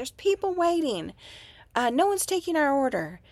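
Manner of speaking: high-pitched, loud screaming. Retelling a lady in line at an unstaffed counter, imitating someone screaming. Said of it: "she starts screaming".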